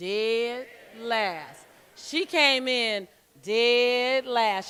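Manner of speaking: dragging out 'dead last'. Showing a co-host how they would say it, dragging out 'dead last'. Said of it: "You know how you drag that out".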